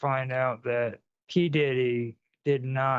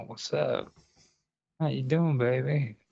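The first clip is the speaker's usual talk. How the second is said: put-on hot, sexy, seductive voice. Speaker saying people want a hot voice, not a face, demonstrating a sexy voice. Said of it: "they want that sexy voice".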